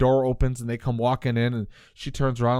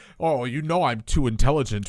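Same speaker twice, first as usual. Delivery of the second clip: put-on villain voice. Retelling a villain's lines from a scene: imitating a villain monologuing.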